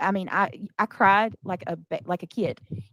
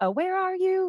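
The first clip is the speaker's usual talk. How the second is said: put-on frantic screaming, higher pitch; 11 semitones higher than usual. Retelling searching for someone in a store: imitating frantic screaming. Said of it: "screaming to the top of my lungs".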